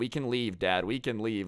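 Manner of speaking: ordinary talk, nothing marked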